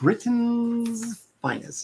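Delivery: slow, high, carefully over-enunciated delivery.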